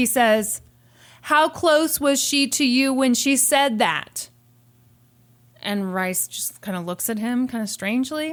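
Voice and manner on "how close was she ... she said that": mock loud bellowing shout. Telling a courtroom story, speaker acts out a questioner shouting at the witness; imitating someone shouting. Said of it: "Then he starts shouting".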